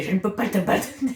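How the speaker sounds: put-on comic Spanish accent. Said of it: "je prends l'accent espagnol juste pour le rire".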